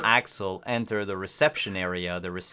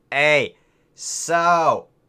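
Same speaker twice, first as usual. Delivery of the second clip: odd put-on Brooklyn accent, higher and louder; 8 semitones higher, 9 dB louder than usual. Voicing a tentacle monster receptionist greeting players: weird put-on Brooklyn accent. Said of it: "my weird ass".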